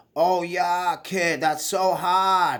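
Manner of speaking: very slow, drawn-out, thick fake Boston accent. Mocking people online who fake the accent: thick fake Boston accent. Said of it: "They're throwing it on and they have it thicker than ever".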